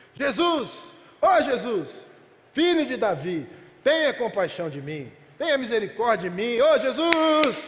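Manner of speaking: acted, full-force, drawn-out cry at full strength. Retelling a sermon story of a blind beggar calling out: acting out a full-force shout. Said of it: "começa a gritar com toda a sua força".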